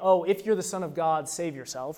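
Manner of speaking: ordinary talk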